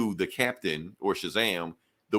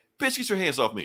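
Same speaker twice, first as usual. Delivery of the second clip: high, frantic, panicked freak-out; 6 semitones higher than usual. Retelling a comic scene where the hero shoves someone off: acting out a character freaking out. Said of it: "that's when he starts freaking out".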